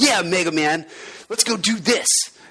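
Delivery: high, overwrought, hammy nineties anime dub voice. Reading Mega Man text aloud to someone who can't read yet, Zero in 90s anime dub voice. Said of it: "I'll read it in this like what I imagine to be anime voice".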